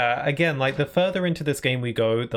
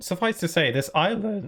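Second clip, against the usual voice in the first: voice cracking, much higher pitch; 6 semitones higher than usual. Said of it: "Oh, God, my voice".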